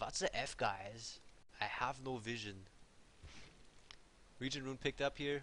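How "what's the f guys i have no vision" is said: put-on German accent. Imagining how the pinged message might be said, in a put-on german accent. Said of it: "Maybe he says it with a German accent".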